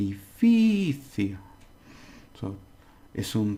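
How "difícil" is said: difícil with heavy stress on fí. Spanish lesson on the word difícil; strong stress on fí in difícil. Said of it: "we have to put fi. Fi. We have to really".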